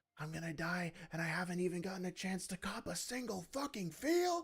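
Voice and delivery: mock high, all-out scream at the top of lungs. Retelling a scene where a character jumps out of a building: imitating a scream. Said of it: "screaming at the top of his lungs".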